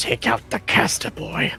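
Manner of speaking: guttural voice. Game master voicing someone calling from another part of the woods, guttural voice. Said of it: "you hear in a guttural voice".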